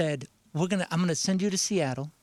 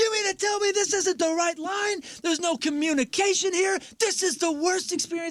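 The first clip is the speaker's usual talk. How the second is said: put-on very high, furious screaming rant; 14 semitones higher than usual. Retelling how a man in an immigration line came out, imitating him screaming. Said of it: "he comes out screaming".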